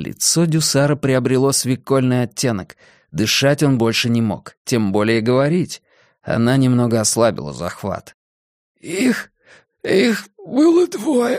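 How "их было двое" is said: very high, hoarse, strained, squeezed-out words. Narrator reads a gendarme answering a woman's interrogation, hoarsely forcing words out. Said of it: "хрипло выдавил из себя жандарм".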